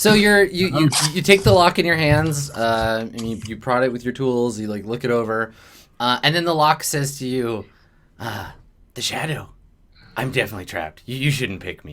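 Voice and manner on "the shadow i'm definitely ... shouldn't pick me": hushed whisper, much lower and quieter. Game master voicing a talking lock to a player: whispering lock voice. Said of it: "Just like whispering voice".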